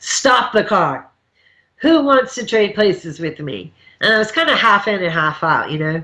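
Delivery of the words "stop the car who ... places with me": mock guardian angel voice, big but only hinted. Retelling riding shotgun with five in the car, suddenly speaking up: booming voice. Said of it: "this booming voice came out of me".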